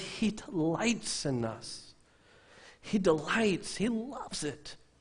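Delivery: high, slow cracking voice. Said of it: "Forgive my cracking voice up here".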